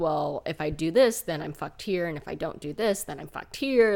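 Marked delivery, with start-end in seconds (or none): none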